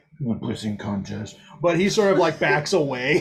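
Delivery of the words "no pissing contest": muttering character voice, lower. Voicing Lord Callan as he backs away, muttering under his breath. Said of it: "mutter under his breath".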